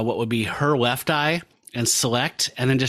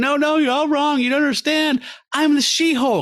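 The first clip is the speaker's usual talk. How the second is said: put-on very high-pitched, panicked, frantic freak-out; 4 dB louder than usual. Retelling a comic scene of a woman accused at trial, imitating her freaking out. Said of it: "she's like freaking out".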